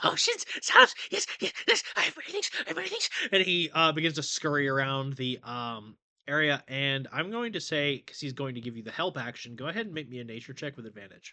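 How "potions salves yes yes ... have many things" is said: frantic, fast, loud, manic rattled-off delivery. Voicing a shopkeeper rattling off his wares: manic rattling off. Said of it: "rattling stuff off in some kind of manic fugue state".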